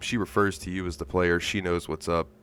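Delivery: ordinary delivery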